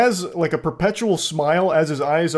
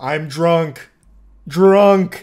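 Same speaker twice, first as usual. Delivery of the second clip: loud, blunt caveman talk in single words; 5 dB louder than usual. Mocking a drunk driver named Wayne, speaking like a caveman. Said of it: "Speaking like a caveman with like one word".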